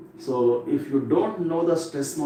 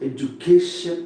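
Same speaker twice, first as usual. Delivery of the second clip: education with ca hit with force. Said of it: "K should be pronounced with greater force".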